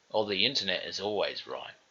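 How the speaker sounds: plain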